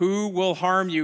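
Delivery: ordinary delivery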